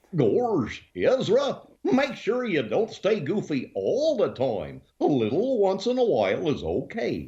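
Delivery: goofy cartoon dog voice. Answering what Goofy would say to Ezra, in Goofy voice. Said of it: "doing the voice of Goofy".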